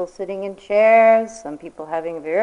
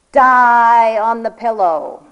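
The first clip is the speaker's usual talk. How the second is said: booming bellow with die stretched long; 2 semitones higher, 7 dB louder than usual. Recalling the monitor calling out at the beginning of retreat, retelling a bellowed command. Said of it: "the monitor bellowing out".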